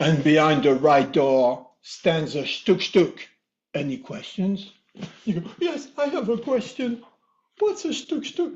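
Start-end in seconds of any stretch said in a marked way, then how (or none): 0.0-4.7 big voice booming out each word. Telling a listener about a dream, voicing the mysterious voice, booming. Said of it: "the voice booms again".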